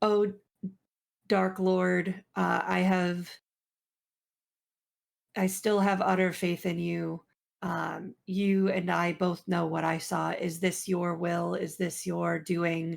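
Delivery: low, muttered mumbling under the breath. Voicing a character praying to a dark lord: mumbling a prayer under breath. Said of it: "I'm just mumbling as I'm like".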